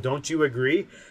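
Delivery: ordinary delivery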